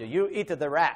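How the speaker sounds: put-on non-native speaker's broken English with foreign accent. Retelling a man's question to him in broken English: broken-English accent. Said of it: "he said in broken English".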